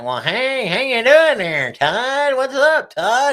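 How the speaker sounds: teasing put-on country drawl, high and loud. Retelling how someone greeted them while making fun: mocking imitation of a country accent. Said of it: "He was making fun of me".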